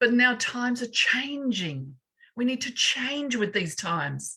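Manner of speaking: heartfelt, fervent, impassioned voice. Speaking to Karen about how we need to change: passionate voice. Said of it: "You can hear the passion in my voice".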